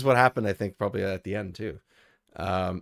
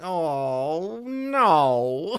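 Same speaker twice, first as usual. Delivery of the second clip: whiny, high-pitched "no", stretched out long; 5 semitones higher than usual. Also imitating the character Andrew: whiny Andrew voice. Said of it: "That's exactly what he sounds like".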